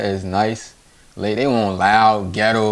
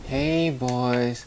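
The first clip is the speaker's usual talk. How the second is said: quieter put-on soft, gentle voice; 2 semitones higher, 6 dB quieter than usual. Describing how Marilyn Monroe talked: soft-spoken Marilyn Monroe imitation. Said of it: "she speak nice".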